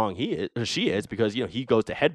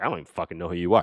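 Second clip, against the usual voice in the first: put-on arrogant villain voice, lower pitch; 3 semitones lower than usual. Retelling a movie scene, quoting Thanos: imitating an arrogant Thanos. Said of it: "arrogant, arrogant to a T".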